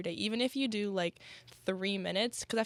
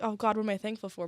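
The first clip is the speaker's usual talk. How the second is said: acted panicked, pressured voice; 3 dB louder than usual. Describing the everyday table ritual, imitating a pressured panic. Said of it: "you'd be like really pressured".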